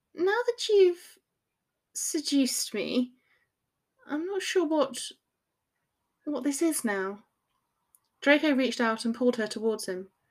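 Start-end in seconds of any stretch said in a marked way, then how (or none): 0.2-6.9 nervous, uneasy, tentative, slow, pitched up. She starts a serious talk with Draco after his teasing question; nervous. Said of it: "she began nervously".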